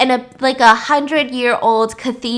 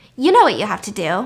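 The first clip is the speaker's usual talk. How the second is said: deadpan, dead straight, flat delivery; 3 semitones lower than usual. Retelling a movie scene where a character answers deadpan: imitating Charlotte's deadpan line. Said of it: "looks deadpan into the camera and says".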